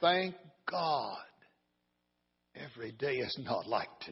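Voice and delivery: very quiet, calm, unruffled, low voice. Telling how townspeople asked an old man for his view: retelling a calm reply. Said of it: "with a calm voice".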